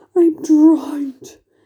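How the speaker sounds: high, loud, gasped-out outburst. Narrator reads the old green grasshopper on the giant peach, gasping. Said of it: "gasped the old green grasshopper".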